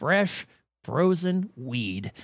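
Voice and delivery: slow, drawn-out, dramatic documentary narrator voice. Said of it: "this is where he'd pause for dramatic effect".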